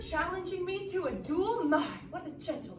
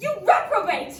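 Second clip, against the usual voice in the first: very loud, full-volume shout; 4 semitones higher, 8 dB louder than usual. In an argument in a drama, insulting the other person, shouting. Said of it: "don't shout at me".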